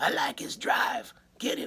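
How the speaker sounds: garbled, barely intelligible put-on voice. Retelling an audition, imitating his hard-to-understand voice. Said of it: "now I'm going to do his voice a few times here".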